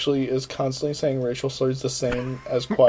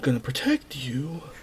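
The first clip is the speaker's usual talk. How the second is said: put-on awkward hero voice, quieter; 5 dB quieter than usual. Mocking a movie character's awkward lines: awkward Anakin voice. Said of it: "how fucking awkward his li-, voice lines were".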